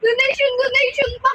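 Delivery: crying, tearful voice with a cry-out.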